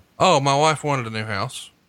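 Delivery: mock matter-of-fact, deadpan tone. Retelling an actor's answer about why he took a bad movie, mock matter-of-fact. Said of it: "very matter of factly said".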